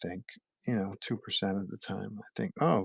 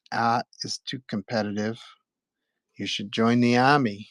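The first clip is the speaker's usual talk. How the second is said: put-on loud, thick Boston accent; 2 semitones higher, 7 dB louder than usual. Quoting a guidance counselor's reply, in a heavy Boston accent. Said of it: "heavy Boston a accent".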